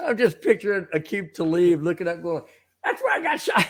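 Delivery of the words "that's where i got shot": high, squeaky put-on voice, much higher pitch. Picturing Aqib Talib looking up as he speaks: squeaky Aqib Talib voice. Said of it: "his little squeaky voice".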